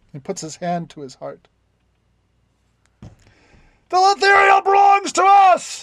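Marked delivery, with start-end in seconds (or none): 3.0-5.8 shrill, very high, drawn-out shouted cry. Game master voicing another elf on the ship answering Svitsimuth, shouting. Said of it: "shouts another".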